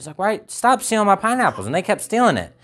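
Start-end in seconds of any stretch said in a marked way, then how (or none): 0.2-1.7 mad, fed-up angry voice, pitched up. Retelling how a missionary reacted when people stole his pineapples: imitating an angry missionary. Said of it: "he got all mad about it".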